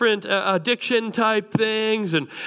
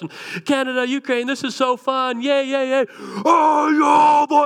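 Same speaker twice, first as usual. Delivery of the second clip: mock drunken yelling, higher and slower; 5 semitones higher, 4 dB louder than usual. Retelling a drunk man yelling from the sidelines at a boys' soccer game, retelling a drunk man's yelling. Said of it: "And he's just yelling from the sideline".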